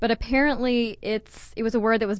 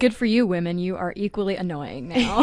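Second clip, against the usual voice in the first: ordinary talk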